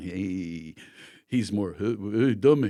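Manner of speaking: put-on sneering drawl. Showing how Jack Nicholson sounds in contrast: Jack Nicholson impression. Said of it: "Jack's more".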